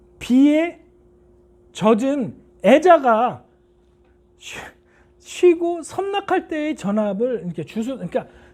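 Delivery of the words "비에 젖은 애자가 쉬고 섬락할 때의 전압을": slow, deliberate, every syllable distinct and clear. Showing students how to answer the examiner, slow, clear enunciation. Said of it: "천천히 또박또박 얘기해야 됩니다".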